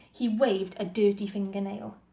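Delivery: plain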